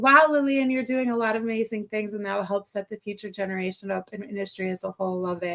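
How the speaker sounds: usual speaking voice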